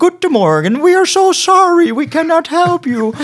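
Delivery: high, loud, sweet, beaming, super friendly voice. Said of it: "Die waren echt super vriendelijk".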